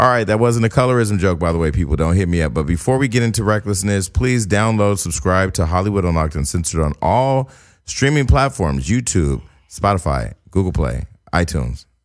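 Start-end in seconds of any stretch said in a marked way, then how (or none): 8.9-11.8 slow, low, drawn-out, careful, deliberate delivery. Podcast host plugging the show to listeners, saying it slowly. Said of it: "I had to say it slow".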